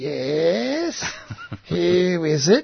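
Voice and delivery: crackly, very slow intercom-like voice, "yes" drawn out. Retelling ringing a stranger's doorbell, a voice answers over the intercom: crackly intercom voice. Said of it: "a crackly voice down the intercom said".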